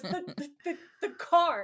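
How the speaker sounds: acted furious stammer. Retelling how Dean storms in on Sam, with a mock rage stutter. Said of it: "He has like a rage stutter".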